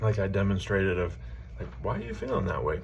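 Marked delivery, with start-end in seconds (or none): 1.8-2.8 genuinely inquisitive, open, curious tone. Demonstrating a tone for investigating emotions, open, curious question. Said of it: "There's openness there, there's curiosity".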